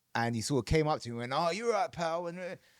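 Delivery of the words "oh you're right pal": put-on drunk man's voice, sounding plastered. Retelling a drunk stranger greeting at a bar: drunk Ricky Hatton impression. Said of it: "proper pissed".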